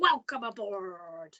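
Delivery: big, roaring put-on pirate voice. Teaching children to welcome people aboard, the speaker shows a big, roary pirate voice. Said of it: "use a big, roary voice and pretend to be a pirate".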